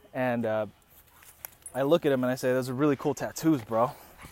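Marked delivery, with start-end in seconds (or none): none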